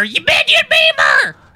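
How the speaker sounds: very high, shrill screaming. Acting out a made-up clash with the commercial lady: imitating screaming at someone. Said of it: "I'd be screaming at her".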